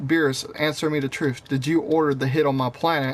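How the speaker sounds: normal talking voice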